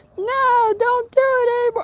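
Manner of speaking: mock very high, stretched-out wailing scream. Retelling what a girl in a rammed car screamed: imitating a girl screaming. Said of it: "there's a girl in the car screaming".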